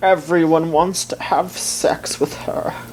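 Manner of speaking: odd, silly, high, cartoonish puppet-like voice. Joking about fans wanting the character Zero Two: weird voice like a dying Muppet. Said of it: "is it like a Muppet dying?".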